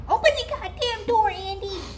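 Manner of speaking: put-on loud, very high child voice. Retelling what she heard through the rattling door, in a little kid voice. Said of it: "in a little kid voice".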